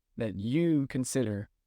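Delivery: ordinary delivery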